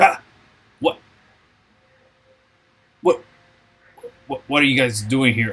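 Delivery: startled, caught-off-guard goblin voice. Voicing a goblin who does a double take at the party: startled goblin voice. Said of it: "they casually actually look at you guys, turn to look away, and then turn back".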